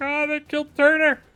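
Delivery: crying with tears. A game narrator voices a character with tears running down, crying with tears. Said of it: "He's got tears running down his eyes".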